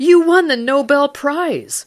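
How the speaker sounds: high, loud, slow excited cry. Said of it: "still excited".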